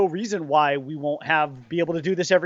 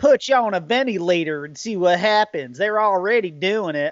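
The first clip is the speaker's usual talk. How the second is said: overdone, heavy put-on southern drawl. Quoting a woman who walked at a man with scissors, in a too-heavy southern accent. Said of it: "She didn't really have a southern accent".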